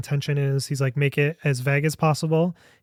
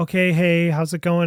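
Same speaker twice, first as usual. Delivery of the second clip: mock-cheerful, upbeat, positive put-on tone; 2 semitones higher than usual. Retelling how a man on screen greeted the speaker, imitating the man's upbeat voice. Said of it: "he has the most upbeat".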